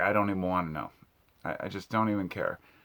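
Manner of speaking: usual speaking voice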